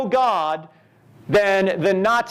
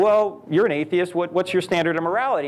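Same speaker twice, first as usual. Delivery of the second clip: ordinary talk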